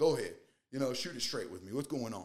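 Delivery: put-on loud, fast, straight-talking Texas cowboy country accent. Retelling a texan man inviting him to speak plainly, in a texas country accent. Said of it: "He's got this like country accent".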